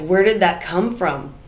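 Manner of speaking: usual speaking voice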